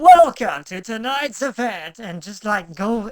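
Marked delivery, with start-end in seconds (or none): 0.0-2.0 very loud, booming arena-style event announcer voice. Telling the other two about a voice made for the event, event announcer voice. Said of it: "I legitimately made an announcer voice".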